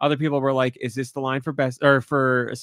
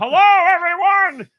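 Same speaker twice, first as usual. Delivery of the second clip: put-on town crier voice, higher and louder; 7 dB louder than usual. Retelling how a store employee stood on a stool announcing: imitating a town crier proclaiming. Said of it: "was like town crier".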